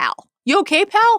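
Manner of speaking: very high, slow dad tone. Quoting the dad checking on his son in the hallway: imitating Augie's tone. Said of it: "It's his tone".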